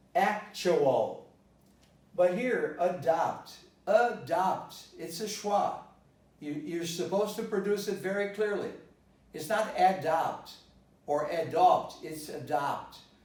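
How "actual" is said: actual with first syllable ac stressed. Showing learners where the stress falls: stress on AC in actual. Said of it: "The stress falls on as".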